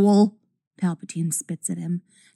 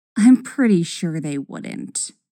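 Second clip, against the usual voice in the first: dry, deadpan delivery; 3 semitones lower than usual. A narrator reads a character's reply to a man's question, said dryly. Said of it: "Ahsoka says dryly".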